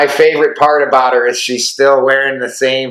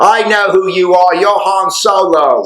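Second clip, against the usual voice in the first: bad, fake British accent, high, slow, stretched; 6 semitones higher than usual. Retelling first meeting the listener's mom, speaker quotes her in a bad british accent. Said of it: "Is that a bad Ray British accent?".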